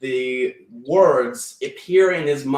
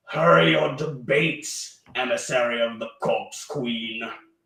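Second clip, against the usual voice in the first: harsh-edged, hard delivery; 3 dB quieter than usual. A narrator voices a psychic image of eyes speaking again, in a harsher tone. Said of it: "in a sort of harsher tone".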